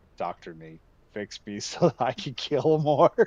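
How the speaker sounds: very loud, booming, slow, drawn-out house-cat voice. Retelling how the house cat acts after a fight, voicing the house cat. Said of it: "He's like".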